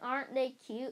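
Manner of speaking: ordinary delivery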